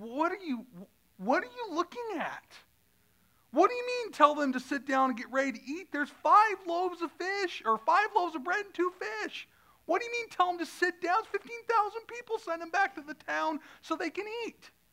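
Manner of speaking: high-pitched put-on voice. Acting out the disciples' objections about feeding the crowd, in a high-pitched voice. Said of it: "I did most of that like in a real high-pitched voice".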